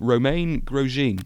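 slow, anglicized British-accent pronunciation.

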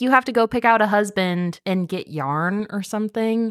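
ordinary talk, nothing marked

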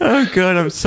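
high, slow speech broken up by laughter. Reacting to a story about a flushed phone, laughing while talking. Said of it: "I'm sorry for laughing".

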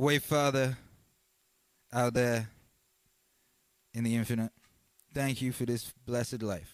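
choked up, about to cry. Giving thanks for a blessed life, choking up. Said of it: "I'm going to start crying".

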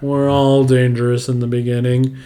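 flat, droning put-on monotone voice. Retelling how someone did an impression of a line, in a Ben Stein monotone impression. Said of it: "this Ben Stein impression of just like monotonous".

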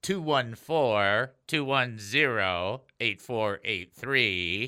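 slowed down, pitched low. Speaker repeats a phone number for listeners to text, a little slower. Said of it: "Let me say that a little slower".

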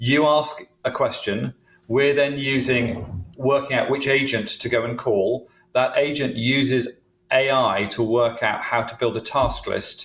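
slow, deliberate delivery.

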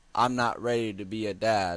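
ordinary talk

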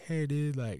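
put-on sweet-talking tone. Retelling pleading with a teacher over a failed class: imitating own sweet-talking. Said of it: "sweet talking her".

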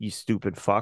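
put-on muttered insult. Acting out a driver who waves while muttering: imitating muttering under breath. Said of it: "under their breath be like".

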